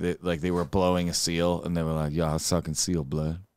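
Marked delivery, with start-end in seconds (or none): 2.1-3.4 low, street-gangster delivery. Speaker imagines them telling a fellow gangster about it: imitating a gangster. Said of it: "saying to like a fellow gangster".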